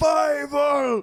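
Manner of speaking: loud shouting. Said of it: "it's an American Tale".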